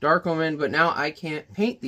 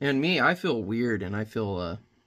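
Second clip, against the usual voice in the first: ordinary delivery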